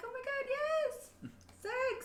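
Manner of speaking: very high tone voice, pitched way up. Imagining how a character talks while discussing her, super high-pitched voice. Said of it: "like a super high tone voice".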